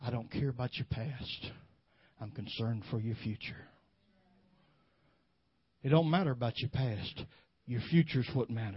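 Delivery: as if whispered. Preacher tells the congregation what Jesus is whispering, retelling a whisper. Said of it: "this is what He's whispering".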